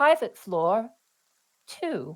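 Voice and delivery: small, high-pitched little announcer voice. Describing an elevator ride, the speaker imitates its little elevator voice. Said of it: "you hear the little voice".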